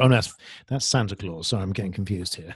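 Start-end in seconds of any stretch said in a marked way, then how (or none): none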